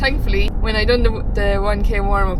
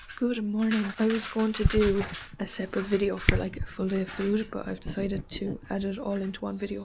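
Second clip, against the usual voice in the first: very quiet, hushed half-whisper; 14 dB quieter than usual. Vlogging breakfast early while everyone else is asleep, half-whispering. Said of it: "I'm whispering because everyone else is still asleep".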